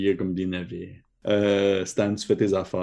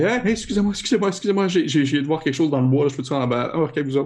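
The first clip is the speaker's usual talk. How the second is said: put-on high-pitched, frightened, scared girl's voice; 7 semitones higher, 4 dB louder than usual. Acting out a girl who comes running up and knocks, frightened girl voice. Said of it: "une fille un peu apeurée".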